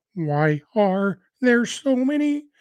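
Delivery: high puppet voice, stretched out. Showing how the voice sounded last week: Fozzie Bear and Kermit mix. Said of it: "I don't sound like a cross between Fozzie Bear and Kermit the Frog anymore. Except when I try to".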